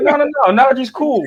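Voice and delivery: high, insistent, eager voice.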